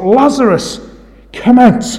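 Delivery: mock high yell at the top of the voice. Retelling how our Lord called someone out of the tomb, retelling a yell at full voice. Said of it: "he yells at the top of his voice".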